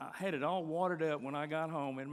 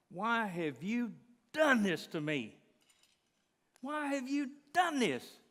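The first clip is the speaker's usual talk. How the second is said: high, furious, lung-bursting angry screaming; 7 semitones higher, 4 dB louder than usual. Retelling screaming at god in anger: retelling own past screaming. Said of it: "I am screaming my lungs out".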